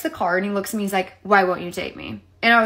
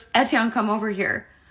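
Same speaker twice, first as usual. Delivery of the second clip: mock, sudden, unsettling, eerily calm tone. Retelling a man who walked into the woods and called the speaker over; imitating a suddenly calm call. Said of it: "all of a sudden got really calm".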